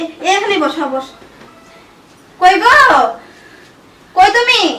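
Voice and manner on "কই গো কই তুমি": loud, urgent calling voice. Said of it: "এত জোরে জোরে ডাকতেছ".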